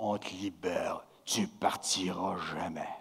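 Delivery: fake, low, deep, hushed, soft big voice. Retelling what two three-year-olds told the speaker during play, imitating kids' put-on big voices. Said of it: "qui prennent des grosses voix".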